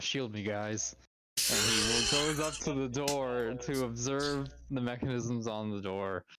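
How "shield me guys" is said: hushed, low mutter under the breath. Narrating a game scene, voicing a character to his group, under his breath. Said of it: "says under his breath".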